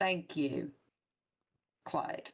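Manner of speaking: slightly upset tone. [name] answers Clyde after Clyde got these back, a little upset. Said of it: "I'm a little bit upset right now".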